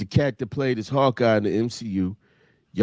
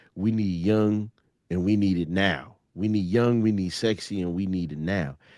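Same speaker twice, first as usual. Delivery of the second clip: put-on callous, heartless, blunt voice; 3 semitones lower, 3 dB quieter than usual. Retelling a movie scene, quoting the main producer: imitating the producer callously. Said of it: "He was like".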